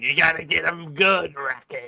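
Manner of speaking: hoarse, raspy, gruff boxing-coach style voice. Telling how his raspy voice once sounded, imitate Mickey from Rocky. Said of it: "I sounded like Rocky's trainer, Mickey".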